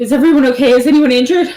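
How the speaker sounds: winded, out of breath. Voicing a character who runs up the stairs: out of breath. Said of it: "very winded".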